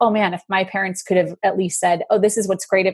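ordinary talk, nothing marked

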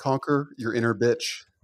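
ordinary talk, nothing marked

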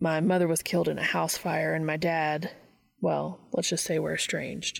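ordinary delivery

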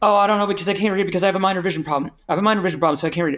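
fast, high, stumbling over words in a rush. Retelling ordering a sandwich in a loud room: imitating own rushed stammering speech. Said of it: "I keep saying really fast, like, tripping over my own words".

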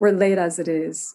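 plain reading voice

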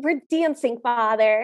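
put-on fed-up, cranky teenage voice, dismissive. Retelling a prince's reply to his father: imitating a cranky teenager. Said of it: "prime, like, cranky teenager".

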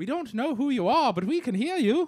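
high Liverpool accent. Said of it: "Where is your Beatle accent?".

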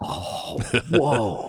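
mock awe, struck with pure wonder. Retelling first seeing a racy scene on tape as a kid: imitating own awed reaction. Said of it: "just in awe".

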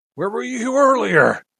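very high, shrill, loud, really angry outburst. Voicing an angry villain questioning a player: really mad. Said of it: "he gets really mad and says".

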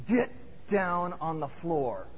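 mock nasty, mean-spirited, slow delivery. Retelling a story, quoting a man the woman hears, in a mock-mean voice. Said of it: "in a very mean voice say".

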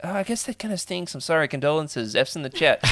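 insincere, fake sympathetic tone.

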